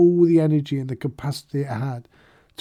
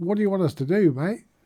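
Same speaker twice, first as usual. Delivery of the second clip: put-on Australian accent; 3 semitones higher than usual. Speaking to listeners mid-discussion, in a put-on Australian accent. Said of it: "did I sound like an Australian?".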